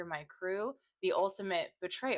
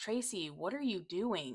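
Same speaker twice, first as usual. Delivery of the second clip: put-on hurt tone, much quieter; 5 dB quieter than usual. Recapping an episode, quoting Mal's line to another character, imitating Mal's hurt voice. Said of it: "you can hear the hurt".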